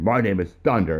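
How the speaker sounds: acted, proud, full of gusto. Retelling a stranger introducing himself at a bar game: imitating someone saying it with great gusto. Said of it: "he said it with great gusto".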